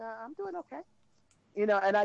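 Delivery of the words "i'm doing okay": put-on meek voice, much higher, quieter. Retelling answering a sheriff's deputy at his car window, meek non-threatening voice. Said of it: "in my most non-threatening, non-uppity voice".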